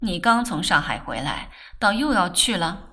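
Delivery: ordinary delivery, nothing marked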